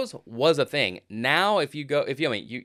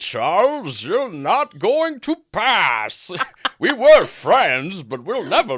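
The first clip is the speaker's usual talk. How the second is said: put-on loud, raised, pitched-up old British man accent; 7 semitones higher, 6 dB louder than usual. Joking with someone about doing an Ian McKellen accent, address Charles in an Ian McKellen impression. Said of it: "Just old British man".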